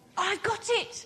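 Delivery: sudden exclaiming cry. Narrator reading a snail speaking to a beached whale in a story, crying out. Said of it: "she cried".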